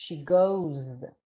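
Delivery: heavy emphasis landing on the word goes. Showing how to model grammar for students, stress on goes. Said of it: "You emphasize on that word. Put stress on that word".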